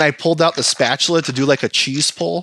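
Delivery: plain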